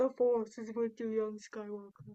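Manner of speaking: poorly done masked-villain voice with mask breathing. Quoting a line from a Star Wars ornament: worst Vader breathing impression. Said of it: "my worst Vader breathing impression".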